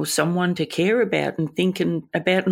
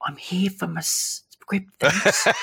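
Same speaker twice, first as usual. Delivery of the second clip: put-on murmur under breath, whispered and slower. Retelling what she whispers to the chemist staff when collecting medication: whispered under breath. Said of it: "And I whisper to the staff".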